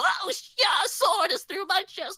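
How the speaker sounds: very high, squeaky, annoying little weakling voice. Speaker describing a character meant to sound like a little whelp, doing a little annoying whelp voice. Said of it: "a little whelp that you really shouldn't".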